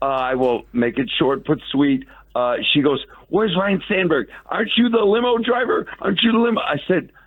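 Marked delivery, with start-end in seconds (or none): 3.3-6.6 put-on, very high-pitched screeching, screaming. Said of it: "She's screaming at me".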